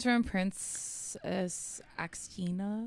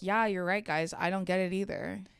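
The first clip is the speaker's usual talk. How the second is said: ordinary talk, nothing marked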